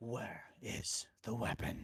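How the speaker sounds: dark, echoing, ringing demonic voice. In a vision of a town in panic, a demon speaks: Demon Batman demonic voice. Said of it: "this is Demon Batman".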